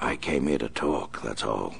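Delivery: hushed whispering. Narrator reads a figure at the window speaking to a middleman, whispering. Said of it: "the Batman whispered".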